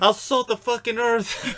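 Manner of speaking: squeaky high-pitched voice. Joining in imitating a boxer's threats: Mike Tyson impression. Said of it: "he's like".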